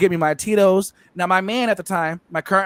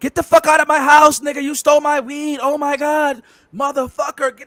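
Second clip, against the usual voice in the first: play-acted, high, furious angry yelling; 8 semitones higher than usual. Retelling how a man woke up and accused him of stealing weed, imitating someone yelling. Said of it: "starts yelling at me".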